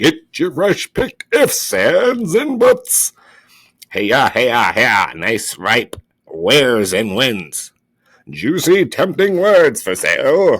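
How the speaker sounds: very loud, swooping street-vendor sales patter. Voicing the market merchants in a story, loud merchant hawking. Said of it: "the merchants voices loudly advertising their products".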